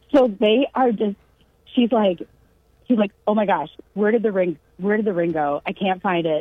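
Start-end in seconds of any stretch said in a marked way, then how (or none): none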